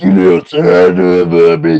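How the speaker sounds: pro wrestler trash talk voice, turned up a notch. Turning an impression up a notch: Stone Cold Steve Austin impression. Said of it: "my Stone Cold Steve Austin impression".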